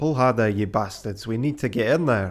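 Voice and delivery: put-on Scottish accent. Bringing a character's voice back during a group story: Scottish accent. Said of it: "I can't bring my Scottish voice back".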